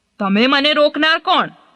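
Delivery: arrogant. An elephant answers the ants on his branch, arrogant. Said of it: "હાથીભાઈ તો બહુ ઘમંડી".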